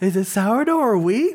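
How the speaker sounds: rising end on wheat, never dropping. Imitating a man who never goes down in his inflection: rising end on wheat. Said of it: "he never goes down in his inflection. ... Like that".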